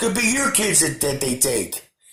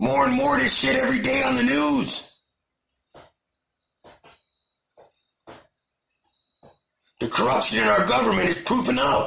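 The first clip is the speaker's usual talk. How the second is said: heated, angry, raised, rough voice; 7 semitones higher than usual. Ranting into the recording, in an angry raised voice. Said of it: "Sorry for raising my voice".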